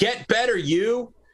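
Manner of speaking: very high, sarcastic drill-sergeant-style delivery. Host gives a shout-out to a friend of the channel, like a drill sergeant. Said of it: "like a drill sergeant".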